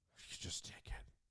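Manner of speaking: defeated, breathy, beaten-down near-whisper. Retelling a delivery driver giving up on payment: imitating a defeated tone. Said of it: "he was so defeated".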